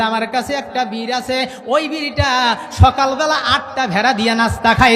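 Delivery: ordinary delivery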